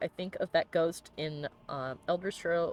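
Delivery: ordinary talk, nothing marked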